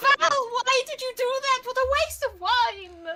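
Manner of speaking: anguished wail, collapsing in dismay. Voicing a character who collapses to her knees: character collapsing in dismay. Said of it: "collapses to her knees like".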